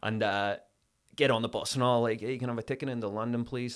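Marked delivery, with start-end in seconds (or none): 2.2-3.8 fake, gentle American accent. Retelling keeping the accent all day before a casting; american accent. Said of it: "I was doing that American accent".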